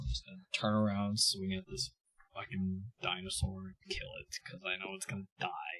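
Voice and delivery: very quiet, soft, deflated, disappointed voice. Tabletop player declaring an attack on a dinosaur on their turn, disappointed. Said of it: "You sound so disappointed".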